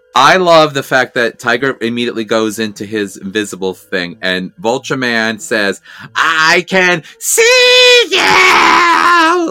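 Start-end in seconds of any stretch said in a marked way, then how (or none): 6.2-9.5 ridiculously stretched, very high, very slow drawn-out shout. Recapping a ThunderCats scene, imitating Vulture Man, drawn out. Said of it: "this long, drawn out, like ridiculous, over exaggerated".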